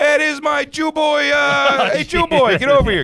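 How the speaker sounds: scream. Retelling a graduation where an uncle runs over: imitating Uncle Tommy screaming. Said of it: "He's screaming".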